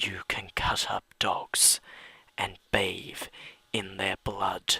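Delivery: soft, creepy, eerie whisper.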